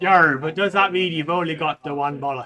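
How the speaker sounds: very loud, teasing, mocking voice. Teasing the other speaker with a question, in a mocking tone. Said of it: "you talking in a mock tone of voice".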